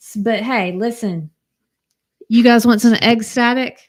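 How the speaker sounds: very loud talk broken by laughter. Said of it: "I'm sorry, I'm laughing at".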